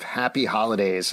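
ordinary delivery

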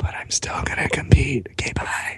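very quiet, breathy whisper. Imagining how an injured man quietly says he'll still compete: imitating someone speaking very quietly. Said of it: "very quietly being like".

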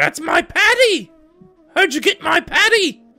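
very high, shrill, loud, bewildered cry. Voicing a woman who looks at the party confused: confused character voice. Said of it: "She kinda looks at you confused".

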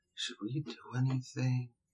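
very quiet, hushed, barely audible half-whisper. Asking a question in character after moving beside someone: half-whispering. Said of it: "Gonna just whisper".

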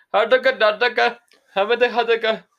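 put-on shrill, loud, high squealing Indian accent. Retelling tonight's scam caller, imitating an indian accent. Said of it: "talking to me in like some Indian accent".

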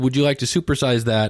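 ordinary talk, nothing marked

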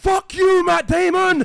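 very loud, high, drawn-out furious shout. Retelling an outburst in the cinema: imitating Yasin shouting. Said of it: "you shouted".

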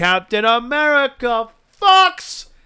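very high, loud, shrill scream at the very top. Telling a story, acting out a girl at a USO show, retelling a scream. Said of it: "she just goes and screams".

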